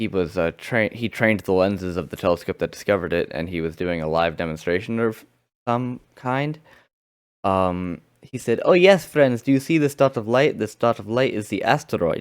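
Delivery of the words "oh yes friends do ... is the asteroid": fake Russian accent, showman's announcer delivery. Retelling a man's live telescope demonstration, speaker quotes him in a put-on Russian accent. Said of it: "That's why I'm doing that accent".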